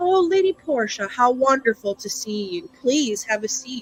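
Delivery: exaggerated mock courtesy. Voicing a lord who greets lady portia at the table: exaggerated sarcastic politeness. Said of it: "it's very exaggerated and, and sort of sarcastic".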